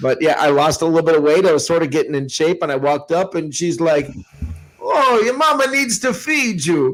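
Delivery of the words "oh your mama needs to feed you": put-on Italian accent, very high and slow. Retelling what an aunt in Chicago used to say: imitating Aunt Mary's Italian accent. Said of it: "insulted by your, by your accent".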